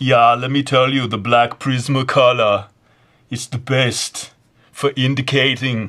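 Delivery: loud, punched-out delivery in a strong Austrian accent. Asked by others to do Schwarzenegger, speaker obliges with an Arnold Schwarzenegger impression. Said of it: "Do the old Arnold Schwarzenegger".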